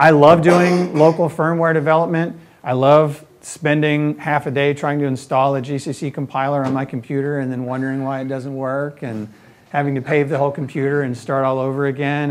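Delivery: ordinary delivery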